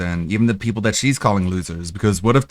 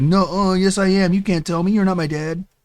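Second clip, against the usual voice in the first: very high-pitched, mocking tone; 10 semitones higher than usual. Retelling her reply to people who say she can't be an influencer: mocking imitation of her reply. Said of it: "and she's like".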